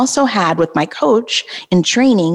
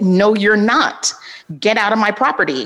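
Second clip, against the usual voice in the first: put-on loud, raised tone; 2 semitones higher than usual. Telling fans about a man forcing his way in, retelling a raised voice. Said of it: "raise my voice".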